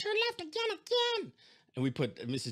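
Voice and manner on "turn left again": very high-pitched puppet voice. Retelling the GPS directions after downloading a new voice, in Elmo's voice. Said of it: "he's like".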